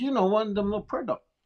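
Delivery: put-on Navajo-accented speech. Retelling how Wesley answered when you didn't know what he was talking about, in Wesley's heavy Navajo accent. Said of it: "he's had his heavy Navajo accent".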